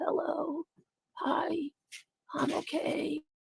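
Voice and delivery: feeble sick voice, very soft, drawn out, hushed, creaky. Mocking someone who blamed high blood pressure, mimicking a flu-sick voice. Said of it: "why do you sound like you have the flu".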